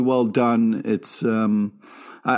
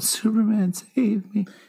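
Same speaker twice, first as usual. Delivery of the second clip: tiny, high-pitched little voice; 9 semitones higher than usual. Quoting a villain's last dying plea to save him: tiny Lex Luthor voice. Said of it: "He's using tiny voice".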